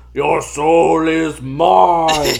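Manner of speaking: loud mummy voice, "mine" drawn out. Trying out voices before moving into horror thriller, mummy voice. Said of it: "that would be like the mummy".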